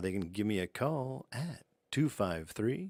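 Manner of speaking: put-on late-night radio talk show announcer voice. A guest telling folks how to reach him, in a late-night radio voice. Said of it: "This is my radio voice".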